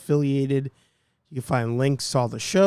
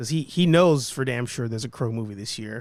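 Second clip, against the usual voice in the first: usual speaking voice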